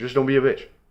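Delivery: fast, rushed words blurred together. Quoting how he says a phrase, said fast, run together. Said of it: "It sounds better when you say it fast like that".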